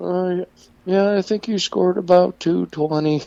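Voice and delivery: mock glum, unexcited, melancholy, very high voice. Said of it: "melancholy tone to him".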